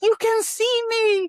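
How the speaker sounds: put-on very high-pitched, loud small child's voice. Recalling the first time they switched after their ex greeted them: small child voice. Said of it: "this kid came out".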